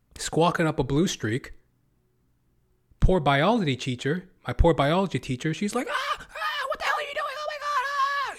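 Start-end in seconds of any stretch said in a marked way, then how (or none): 5.9-8.4 put-on shrieking voice, very high screaming outburst. Retelling the biology teacher's reaction to the fake bee: imitating teacher screaming. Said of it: "She's screaming too".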